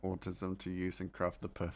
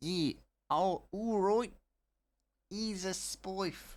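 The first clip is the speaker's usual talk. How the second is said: put-on New Zealand accent, very high, very slow; 12 semitones higher, 4 dB louder than usual. Telling a story about asking for a spliff, answering as the other person in an attempted Kiwi accent. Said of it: "or however Kiwis talk".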